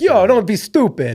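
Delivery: confident, slow Long Island voice. Imitating a confident mom from a story: Long Island mom impression. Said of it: "that's my best Long Island mom".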